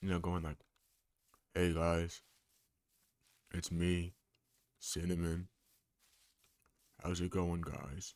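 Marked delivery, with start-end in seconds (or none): 1.5-8.1 put-on lowered, deep, slow voice. Showing how greeting viewers would sound: fake deepened voice. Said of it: "fake deepening my voice like Candle".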